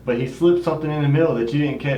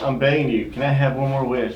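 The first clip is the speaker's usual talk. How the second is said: ordinary talk, nothing marked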